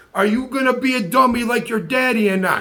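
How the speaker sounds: put-on strong, tough-sounding Italian man's accent. Retelling John questioning Louie at work, imitating John, a strong Italian man. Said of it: "my best and cleanest impersonation of a of a strong Italian man".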